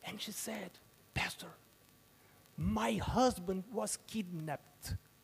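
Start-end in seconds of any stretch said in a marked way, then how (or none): 1.1-4.9 put-on very low voice, quieter. Retelling a phone call from the chief deacon's wife: imitating a very low voice. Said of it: "she was speaking in a very low voice".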